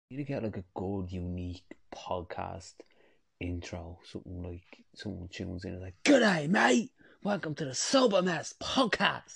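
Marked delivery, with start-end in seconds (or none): 6.0-9.3 bad fake Australian accent, very high and loud. Pitching an intro for the sober mess podcast, in a terrible australian accent. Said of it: "that was a terrible accent".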